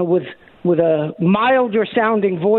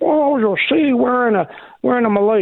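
mock preachy politician voice, much higher pitch; 5 semitones higher than usual. Describing Carter's malaise speech, speaker quotes him preaching to the country, Jimmy Carter impression. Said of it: "I can't do a particularly good Jimmy Carter".

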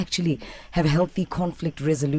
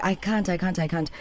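ordinary delivery

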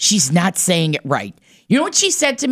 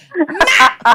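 bossy, nagging voice. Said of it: "you've heard that bossiness before".

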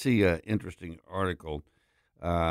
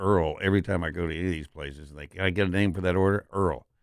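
ordinary delivery

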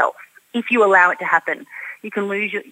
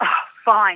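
put-on exasperated, annoyed huff. Speaker recounting how she repeated a line on request, imitating a huffy reply. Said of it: "she'd say it with a huff".

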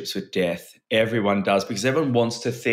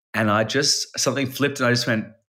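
usual speaking voice

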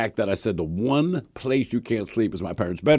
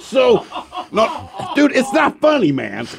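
frantic, high, panicked, begging pleading protest; 13 semitones higher, 5 dB louder than usual. Retelling how a guy reacted after Leon's statement: imitating panicked pleading. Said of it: "this dude is clearly panicking".

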